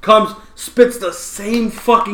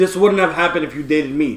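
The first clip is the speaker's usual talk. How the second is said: ordinary talk, nothing marked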